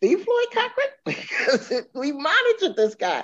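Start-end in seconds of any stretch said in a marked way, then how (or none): 0.0-0.9 very high, stunned, incredulous tone of disbelief. Recounting a phone call, speaker repeats his reaction to the caller's name: retelling own disbelief. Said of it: "I was in disbelief".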